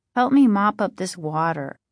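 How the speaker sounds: plain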